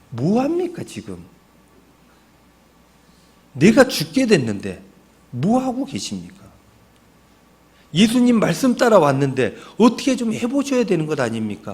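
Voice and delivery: aggrieved, resentful, reproachful complaining tone. Acting out the disciples waking Jesus on the boat, mock-resentful complaint. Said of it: "원망하는 말투예요".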